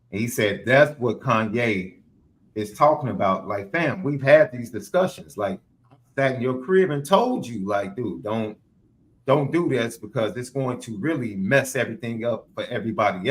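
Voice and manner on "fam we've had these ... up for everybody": normal talking voice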